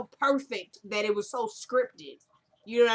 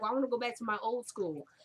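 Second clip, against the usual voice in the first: ordinary talk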